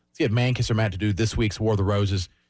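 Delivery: ordinary delivery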